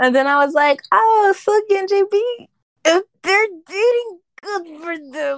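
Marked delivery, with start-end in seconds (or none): 0.9-5.4 pained, pitched up, through gritted teeth. Retelling their own reaction to a rumor: retelling through clenched teeth. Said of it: "The pain in your voice".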